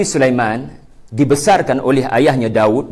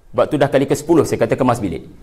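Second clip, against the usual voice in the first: usual speaking voice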